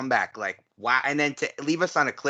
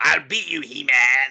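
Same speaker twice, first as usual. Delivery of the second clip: put-on raspy villain voice, louder; 5 dB louder than usual. Discussing a performer's range for Skeletor, doing a mock-angry raspy Skeletor voice. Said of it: "That was a terrible impression".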